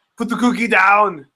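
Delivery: put-on barked Austrian accent. Showing the voice you do every time for a kid with a Mr. Freeze toy, Arnold voice. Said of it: "I do the Arnold thing every time".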